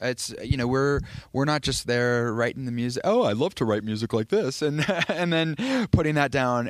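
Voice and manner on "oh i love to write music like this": mock silly idiot voice, faster. Talking about working with a producer, a composer puts on his idiot voice. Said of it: "that's my idiot voice".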